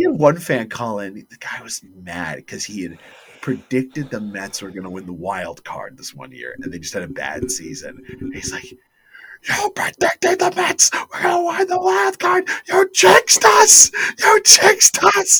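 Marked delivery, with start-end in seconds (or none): 8.7-15.4 shrill, very high, loud screaming rant. Retelling a fan's call-in, the speaker acts out the host: imitating someone screaming at a caller. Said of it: "And he's screaming at him".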